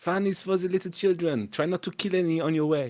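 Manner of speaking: very high-pitched, put-on, bad French accent. In a scene, the speaker voices a character leaving, in a bad French accent. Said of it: "loving my bad French accent".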